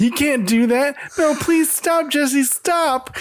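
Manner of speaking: high, pleading crying out. Retelling an episode, imitating Bobby crying out to stop. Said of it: "Bobby cries out".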